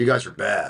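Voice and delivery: mock deadpan, bone-dry, straight delivery with no reaction. Retelling a golf outing, the speaker quotes a man's reply to the group: mock deadpan delivery. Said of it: "he just deadpan".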